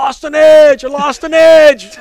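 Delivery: very loud, very high-pitched shouting yell. Retelling a skater who lost an edge yelling past the bench, retelling a yell. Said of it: "and he's yelling".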